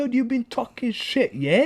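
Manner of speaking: put-on Cockney accent. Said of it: "I'm Cockney, yeah?".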